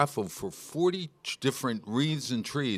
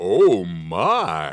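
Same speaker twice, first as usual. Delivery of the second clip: deep, booming voice with "my" drawn out; 6 semitones lower, 8 dB louder than usual. Trying out a catchphrase for the others: George Takei impression. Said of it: "my George Takei in-, in-, impression".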